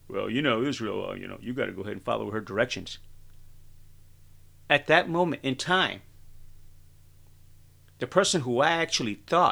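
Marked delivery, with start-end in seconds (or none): 0.1-2.9 roughened, rough, creaky movie voice. Retelling the plant manager's answer in a voice like Rocky: Rocky-like voice. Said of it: "It sounded a little bit like Rocky in the movie".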